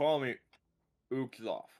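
muffled speech, as if through a mouth full of food. Telling the others what to call him, speaking with mouth full. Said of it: "I still just have my mouth full".

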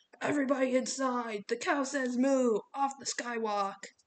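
loud bellow, sounding like through a megaphone. A coach addressing kids on a bridge in strong wind, bellowing through a megaphone. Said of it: "He bellowed over his megaphone".

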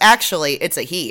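plain

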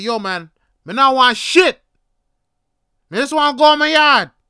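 mock, very loud, high, angry snapping tone. Telling of a man taunting him, the speaker re-enacts his own reply: retelling himself snapping. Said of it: "And I'd snap".

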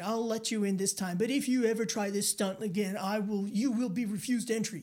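put-on barked, commanding delivery. Speaker retelling a man's warning while trying to get back on the bus, retelling a barked order. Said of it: "barks it out like he's in the Marines".

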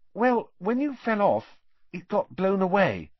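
high, hesitant, reluctant, faltering delivery. Hermione answers Harry's question about his Nimbus, hesitant. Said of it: "said Hermione hesitantly".

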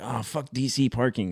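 play-acted fed-up, openly hostile, slow outburst. Recalling him arriving at the CD release throwing his bags, retelling Danny's hostile outburst. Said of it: "he like came in throwing his fucking bags like".

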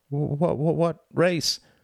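catching, jolted voice. Narrator reads the mouse's question as the badger pulls him along, voice catching. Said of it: "his voice catching because he was bouncing".

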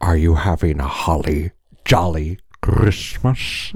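voice dropped low, monster voice. Using a Grinch filter to become the character: Grinch voice. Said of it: "I'm the Grinch".

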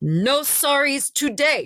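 loudest, high-pitched voice, full out. Retelling a woman's reply to her apology, imitating her loudest voice. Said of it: "she says in her loudest voice".

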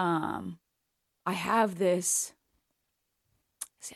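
very slow, tearful crying speech. Admitting a hard realization about the job, crying while talking. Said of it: "I can't even say it without fucking crying".

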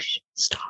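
soft, breathy hushing whisper. Acting out own reaction to seeing a shadow: imitating own whisper.

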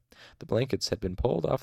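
ordinary delivery, nothing marked

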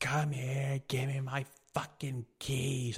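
mock drunken female voice. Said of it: "she was fucked up".

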